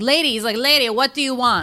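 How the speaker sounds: put-on Jamaican accent. Retelling a story, a man in front of her answers the woman, sort-of jamaican accent. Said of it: "He sounds like Jamaican or something".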